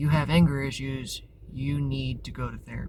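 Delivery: normal talking voice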